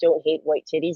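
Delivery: normal talking voice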